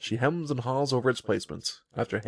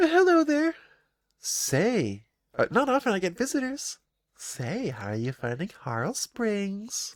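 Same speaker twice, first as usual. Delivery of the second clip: tiny, mischievous sprite voice, high and slow; 8 semitones higher than usual. Storyteller voicing a mischievous sprite greeting a visitor, tiny sprite voice. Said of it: "She has a tiny voice".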